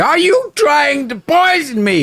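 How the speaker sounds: furious spluttering, very high-pitched and slow. The narrator voices a character reacting to the cabbage remedy, sputtering angrily. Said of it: "he sputters angrily".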